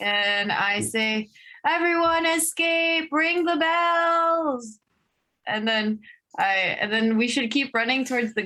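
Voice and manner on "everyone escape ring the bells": high, drawn-out shout. Warning the city in character to escape and ring the bells: yelling a warning. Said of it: "I'm just yelling it".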